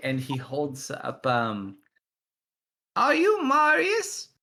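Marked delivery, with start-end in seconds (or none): 3.0-4.2 put-on very high, loud little old gnome man voice. A game master voicing an elderly gnome man addressing a player character, elderly gnome man voice. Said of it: "an elderly little gnome man".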